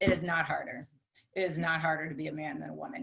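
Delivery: put-on calm deadpan voice. Retelling a husband's calm reply to a friend at dinner, imitating Bob's deadpan delivery. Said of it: "my husband is very deadpan".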